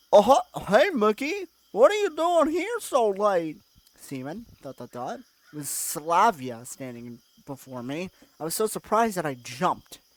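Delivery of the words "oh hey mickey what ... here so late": very high, loud cartoon dog voice. Reading a story aloud, voicing the character who appears from behind: Goofy voice. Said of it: "Goofy voice".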